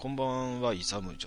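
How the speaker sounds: ordinary delivery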